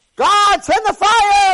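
very high, very loud, maniacal shrieking. Retelling how the false prophets screamed for fire; imitating maniacal screaming. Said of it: "They're screaming like maniacs".

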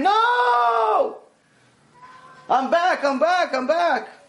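put-on very high, very slow, long scream. Telling a story where a man runs back as his friend faces the rope: imitating someone screaming. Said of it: "they hear the guy scream".

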